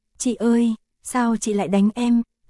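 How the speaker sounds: ordinary delivery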